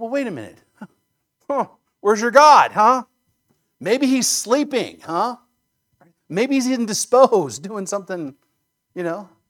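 put-on sarcastic taunting. Retelling how Elijah taunts the other prophets: imitating Elijah's sarcasm. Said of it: "I don't think that the Bible's against sarcasm".

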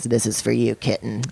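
put-on voice of an older man. Retelling what a man said while handing over a gift: imitating a friend. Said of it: "it's a good impression of him".

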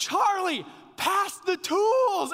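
loud, high, drawn-out scream. Recalling a card game, quoting a player screaming at another player, retold scream. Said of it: "it just like screaming at him".

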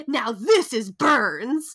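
mock excited delivery. Retelling an orderly's line about the burn ward: imitating an excited orderly. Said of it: "he's so excited".

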